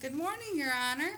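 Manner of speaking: put-on Southern Belle accent, high, quick twang. Explaining how to address a judge in court, Southern Belle twang. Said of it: "bring out your Southern Belle twang".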